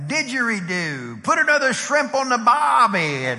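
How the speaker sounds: put-on Australian accent. Retelling a companion playing Australian at a Starbucks, in a fake Australian accent. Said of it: "we're Australian today".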